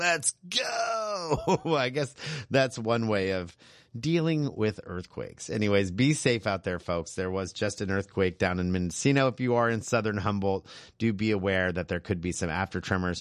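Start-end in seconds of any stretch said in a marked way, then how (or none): 0.0-1.6 high, defiant, shouted battle cry. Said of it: "head on into the storm".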